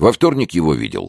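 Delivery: plain reading voice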